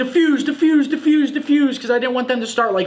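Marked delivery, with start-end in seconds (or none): 0.0-1.7 mock frantic, high-pitched screaming. Recounting the final moments of a winning round to listeners, retelling a scream. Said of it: "I was just screaming".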